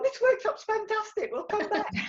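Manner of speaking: gushing, excited crowd voices, pitched high.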